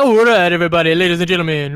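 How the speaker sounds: fast, chatty talk-over DJ patter voice. Speaker mocks DJs who talk over the music, imitating a talk-over DJ. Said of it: "kind of DJs who are like".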